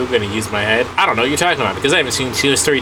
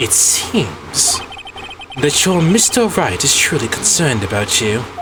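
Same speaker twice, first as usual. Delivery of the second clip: put-on British accent throughout. Playing a voice in another character's ear, in a british accent. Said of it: "I apologize for this British accent".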